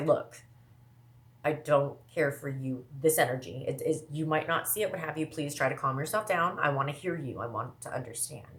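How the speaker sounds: plain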